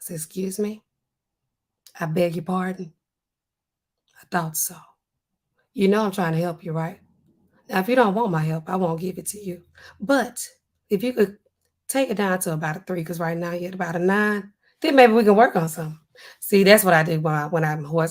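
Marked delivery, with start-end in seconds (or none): 0.2-16.0 lowered voice, speaking from down low. Showing how to answer someone coming in talking crazy: lowered voice. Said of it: "I get lower on 'em. I go down here".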